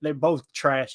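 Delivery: put-on Southern accent. Retelling what a drunk man behind them said; imitating a Southern accent. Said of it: "I'm using a Southern accent".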